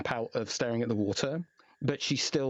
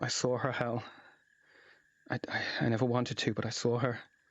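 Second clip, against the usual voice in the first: quiet, stumbling, tearful half-whisper through sobs. Narrator voices Eva half-whispering to you after an hour of quiet, Eva's tearful half-whisper. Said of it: "a quiet sobbing from Eva, and she kind of whispers to you".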